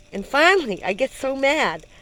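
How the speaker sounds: ordinary delivery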